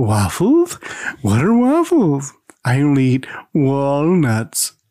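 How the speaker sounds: slow, drawn-out horror voice swooping up and down. Reading a story aloud, as Rob composes himself from giggling and asks Laura, Boris Karloff voice. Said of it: "in a Boris Karloff voice asks".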